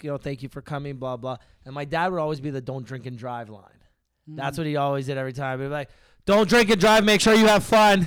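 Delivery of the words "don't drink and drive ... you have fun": full-throated, loud, high-pitched yell. Recalling dad's line at Metric's 30th anniversary, imitating dad yelling. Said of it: "That was loud".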